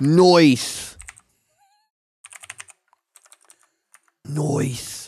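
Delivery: put-on, sing-song Australian accent, drawn-out noise. Joking with another speaker, saying nice: put-on australian accent. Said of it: "That's my Australian nice".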